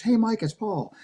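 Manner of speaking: very high-pitched voice. Retelling an answering machine message from Paul, imitating Paul's high voice. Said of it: "Paul has kind of a high voice".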